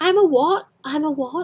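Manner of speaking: high, textbook British English accent. Demonstrating how a quoted line sounds, typical british accent. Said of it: "this is very typical British accent".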